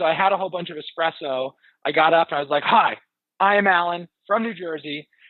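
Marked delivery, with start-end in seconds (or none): 2.6-5.0 put-on goofy, slow, carefully over-enunciated delivery. Recalling introducing themselves the way the contestants did, retelling a goofy, over-enunciated intro. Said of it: "they enunciated well, and they were kind of goofy".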